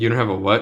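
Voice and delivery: ordinary talk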